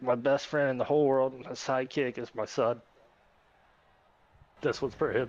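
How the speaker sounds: voice catching, emotional, choking up. Thanking people after winning a race, naming the son: emotional, choking up. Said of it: "I'm being emotional".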